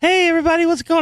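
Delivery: very high, squeaky, helium-like voice. Radio host imitates how he sounded on his early shows, helium-high early radio voice. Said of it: "I sound like I'm on helium".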